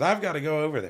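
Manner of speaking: high, loud, fast, boisterous exclamation. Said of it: "his boisterous way".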